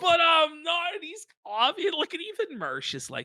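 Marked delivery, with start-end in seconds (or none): 0.0-0.9 put-on drunk voice, pitched higher. Imitating Ralph insisting he is not drunk: imitating drunk Ralph. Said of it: "Every time he's drunk and he goes".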